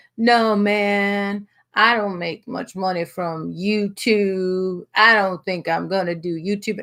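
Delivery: put-on slurred speech. Describing a man suddenly talking differently at dinner, imitating his slurred speech. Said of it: "he was like slurring".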